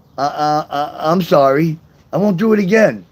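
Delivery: put-on nervous stutter, stammering. Retelling a nervous reply to a girlfriend: imitating own stutter. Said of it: "I stuttered and said".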